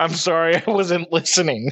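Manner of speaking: mock dry, flat, expressionless deadpan delivery. Retelling a story about a dude answering a cop, imitating a deadpan reply. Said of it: "the dude just deadpans".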